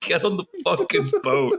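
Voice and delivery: mock incensed high swooping yell, increasingly Irish. Telling a story about a man who kept yelling; retelling a yell. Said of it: "He just kept yelling".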